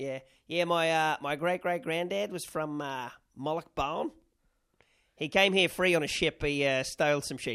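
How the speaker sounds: put-on Australian accent. Imitating some Australian talking about his ancestry, in an Australian accent. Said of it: "Some fucking Aussie. Be like".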